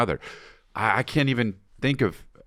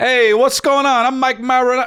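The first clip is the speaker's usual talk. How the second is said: Italian-American sounding voice; 14 semitones higher, 7 dB louder than usual. Telling someone who you did that to, imitating Mike Manarelli, so Italian. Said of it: "So Italian".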